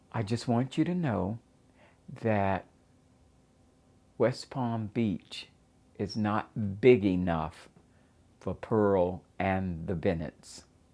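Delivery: ordinary delivery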